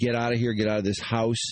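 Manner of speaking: usual speaking voice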